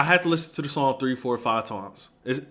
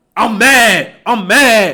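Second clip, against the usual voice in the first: very loud, very slow, booming, drawn-out furious shout; 8 semitones higher, 13 dB louder than usual. Explaining tone to listeners by demonstrating an angry yell. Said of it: "that's an angry yell".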